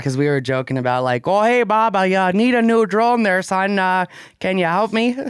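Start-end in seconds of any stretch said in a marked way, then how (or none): 1.3-5.2 slow, high-pitched, put-on Midwestern accent. Retelling a joke about a drone client: imitating a Midwestern accent. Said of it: "that is an accent of endearment".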